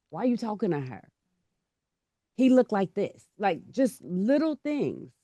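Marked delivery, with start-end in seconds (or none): none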